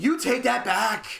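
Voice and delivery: slow, offended, affronted and indignant tone. Retelling a sitcom scene, imitating Sheldon's indignant outburst: Sheldon voice, indignant. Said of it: "and Sheldon goes".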